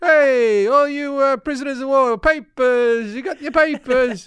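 very high, drawn-out put-on paperboy cry. Acting out a 1950s paper boy: imitating a 1950s newsie. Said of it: "a newsie for the nineteen fifties".

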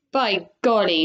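ordinary delivery, nothing marked

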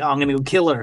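happy, eager, gleeful delivery. Describing a scene of the killer bursting in: imitating a happy killer. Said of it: "he looks so happy to be like".

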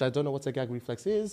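put-on French-accented English.

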